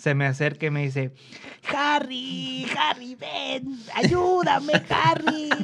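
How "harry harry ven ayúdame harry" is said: put-on old man voice, very high, very slow, drawn out. Retelling a coworker calling him over for help at work, imitating an old man's voice. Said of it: "Lo imitas como de 60 años".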